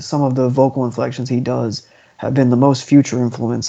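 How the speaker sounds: ordinary delivery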